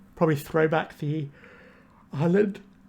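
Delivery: speaking through a yawn. A player commentating on his own card game speaks while yawning. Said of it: "sorry, yawning there".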